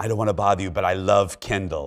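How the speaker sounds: soft, hushed stage whisper, kept close. Retelling two people in a line coming up: imitating a half-whisper. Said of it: "come up to me and whisper".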